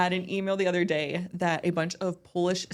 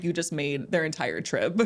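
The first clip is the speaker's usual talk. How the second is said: ordinary delivery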